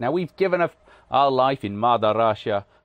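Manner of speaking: exaggerated fake Russian accent, loud. Speaker announcing their own attempt at an accent; bad russian accent. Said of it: "it's my attempt at a bad Russian accent".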